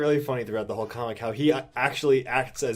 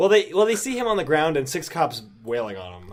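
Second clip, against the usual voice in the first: plain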